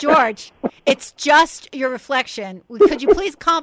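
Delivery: very loud, high-pitched exasperated yelling. Retelling how Ethel yelled at George for attacking the window: Ethel's yelling, acted out. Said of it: "I could see Ethel yelling at him".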